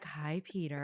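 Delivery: mock seductive, sultry voice. Imitating how another speaker greeted her crush: imitating a sultry greeting. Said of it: "kinda did, like, a sultry".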